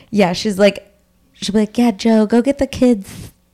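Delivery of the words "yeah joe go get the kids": put-on lisp, pitched higher. Imitating a film character telling Joe to get the kids: imitating Julianne Moore's lisp. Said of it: "Julianne Moore has this lisp, this crazy lisp".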